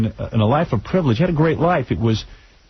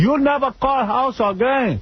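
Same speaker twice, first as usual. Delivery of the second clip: put-on Cuban accent, much higher pitch; 11 semitones higher than usual. Retell what you told the woman from AT and T on the phone, in a Ricky Ricardo accent. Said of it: "It's Ricky Ricardo".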